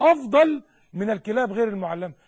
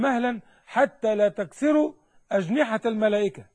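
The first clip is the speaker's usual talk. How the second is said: usual speaking voice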